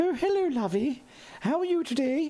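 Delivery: very high, posh grandmotherly voice. Greeting viewers in chat, best Mrs. Doubtfire voice. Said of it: "Best Missus Doubtfire voice".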